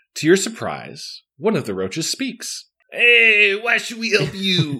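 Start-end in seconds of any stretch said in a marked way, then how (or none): 2.9-4.8 bad, unconvincing East Coast accent, very high pitched. As a roach answering someone's plea for help in a story, speak in a bad East Coast accent. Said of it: "You were never made to be on the East Coast of this country".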